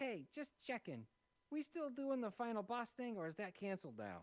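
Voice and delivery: squeaky, very high, small goblin voice. Game narrator voices a small goblin peeking in through a castle door, small goblin voice. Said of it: "the small goblin uh, uh, peeks in".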